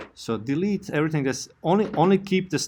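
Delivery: rushed overexcited voice.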